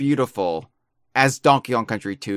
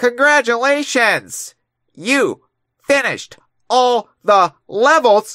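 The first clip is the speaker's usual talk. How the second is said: put-on old robotic speech-synthesizer voice, much higher, slower; 11 semitones higher, 5 dB louder than usual. Retrying the game's announcement that all levels are finished; like a 1970s speech-to-text device. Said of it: "You sound like one of those".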